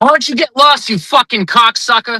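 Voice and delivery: high put-on Boston accent. Put on the spot to tell someone off in a boston accent. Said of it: "Give me your best Boston accent".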